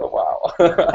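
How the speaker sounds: sheepish, flustered, slightly embarrassed exclamation. Retelling a shop visit, imitating someone embarrassed. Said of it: "she was a bit embarrassed".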